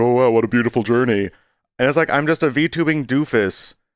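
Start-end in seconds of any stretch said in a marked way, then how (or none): 0.0-1.3 sneering, mocking, sarcastic tone. Recalling mocking their own journey at work, imitating own mocking tone. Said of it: "a mocking tone of voice".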